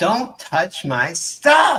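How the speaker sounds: tiny, small voice shrieking very loudly. After the players take damage, the game master voices a little voice, screaming. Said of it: "a little voice screaming".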